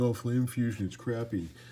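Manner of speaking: little, weird, silly, dopey put-on voice. Mocking people who call the Flame Fusion crappy, in a weird dumb voice. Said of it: "forgive my little weird dumb voice there".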